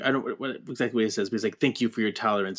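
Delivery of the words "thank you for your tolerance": very snide, mocking delivery. Retelling what Beast says to Trish: imitating Beast's snide tone. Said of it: "in a very snide kinda way".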